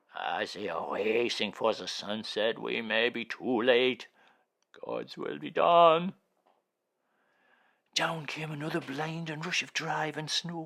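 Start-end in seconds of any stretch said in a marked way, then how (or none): 0.1-6.1 empty, hollow tone, raised voice. Reading a story aloud, a character fearing they are too late: hollow voice. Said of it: "went on in a hollow voice".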